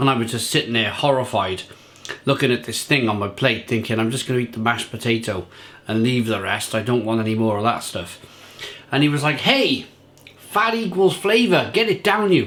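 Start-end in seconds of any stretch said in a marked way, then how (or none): 9.4-12.5 put-on rough-and-ready New York accent, pitched high. Quoting a man pushing food on the speaker at the table, in a new york accent. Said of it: "whatever New York accent he had at the time".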